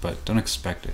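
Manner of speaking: ordinary talk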